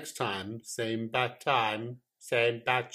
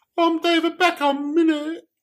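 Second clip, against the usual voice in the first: put-on very high, loud English accent; 11 dB louder than usual. Showing how David Beckham sounds, high English accent, David Beckham. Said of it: "He's got quite a high voice, and he's English. And English people all sound like".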